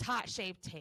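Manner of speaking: put-on thick Boston accent. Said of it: "She always says that in her videos".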